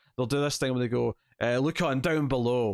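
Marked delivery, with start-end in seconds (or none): 1.6-2.7 mock presenter voice, slow and cheesy, fully hammed up. Imitating YouTubers pointing to links in the description: imitating a cheesy presenter voice. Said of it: "really cheesy voice where they're doing".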